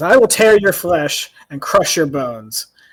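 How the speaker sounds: very loud, booming, roaring dragon voice. Narrating a game, the speaker voices the dragon threatening a player. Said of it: "The dragon laughs at, ... and he says".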